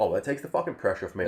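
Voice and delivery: ordinary talk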